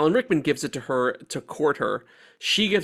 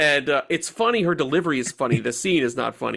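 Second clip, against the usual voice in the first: normal talking voice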